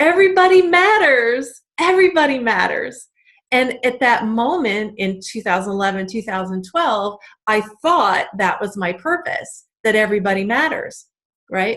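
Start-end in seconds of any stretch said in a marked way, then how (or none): 0.0-3.1 acted-out, high, full-throated scream at top of lungs. Retelling standing on a chair, phone to ear with a coach: imitating own screaming. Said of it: "screaming at the top of my lungs saying".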